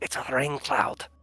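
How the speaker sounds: quiet, slow whispering. Peeking out from the bushes in a game scene, Rook whispering. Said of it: "Is Rook able to like whisper".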